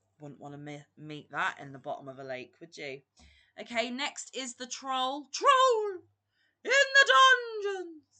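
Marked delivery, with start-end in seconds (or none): 5.3-7.9 put-on voice, very high, very loud and slow. Announcing the troll, the speaker does a Professor Quirrell voice. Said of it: "that's my impression of Professor Quirrell".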